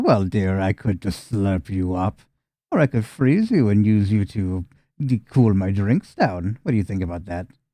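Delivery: very low, sick cackling voice. Narrating a scene, speaking as her to you, in a sick cackling voice. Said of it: "she cackles to you, just a sick cackle".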